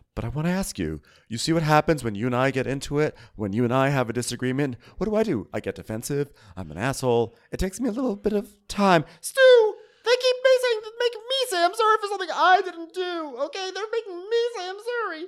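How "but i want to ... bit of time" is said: sounding thoroughly nervous and anxious throughout. Retelling what a man said while sounding nervous: imitating a nervous-sounding man. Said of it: "very nervous sounding".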